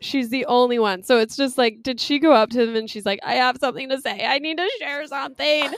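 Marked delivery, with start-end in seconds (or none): 3.2-5.7 put-on drunk voice, much higher pitch. Recapping the Bachelor, speaker imitates a woman at the interviews, imitating drunk speech. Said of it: "she's just like so drunk".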